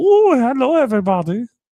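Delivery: put-on loud, high-pitched voice with German accent. Imitating the fat German caterpillar from A Bug's Life: fat German caterpillar voice. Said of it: "is the fat German, uh, caterpillar there. He's like".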